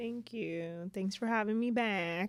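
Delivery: put-on Southern country accent, slipped in. Thanking the others for having you back: country accent. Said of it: "I don't know why I put on a country accent".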